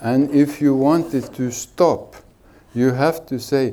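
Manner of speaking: normal talking voice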